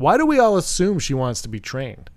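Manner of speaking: plain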